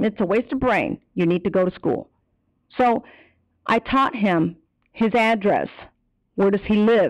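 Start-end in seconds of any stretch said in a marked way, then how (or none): none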